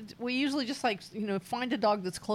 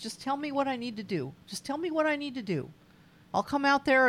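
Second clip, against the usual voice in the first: put-on quick, emotional, pleading, upset New York accent; 5 semitones higher, 3 dB louder than usual. Retelling what an emotional, upset man said, in a New York accent. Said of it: "With a New York accent".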